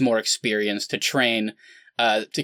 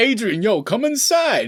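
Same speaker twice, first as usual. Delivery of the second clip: very high, slow, creepy, coaxing voice; 11 semitones higher than usual. Acting out a scene, asking her to come inside: Rocky impression. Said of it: "He's like".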